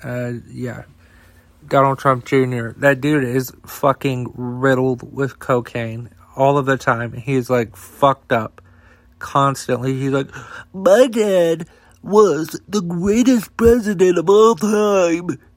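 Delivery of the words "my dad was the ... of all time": high nasal whine, words dragged out. Imitating Donald Trump Jr. talking about his dad: nasally whiny Donald Trump Jr. voice. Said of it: "this fucking nasally, whiny voice".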